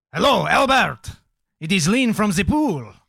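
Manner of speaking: put-on French accent. Imagining how a conversation with Albert went, Lean, put-on French accent. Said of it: "your French accent has thrown me off so much".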